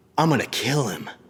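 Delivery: furious, angry, menacing tone. Retelling the story of Jacob and Esau, acting out Esau's angry threat. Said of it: "He was so angry".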